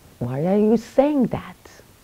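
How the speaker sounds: worked-up, argumentative, agitated, heated tone. Retelling how a twin brother questions them in arguments, retelling an agitated question. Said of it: "not in a calm tone".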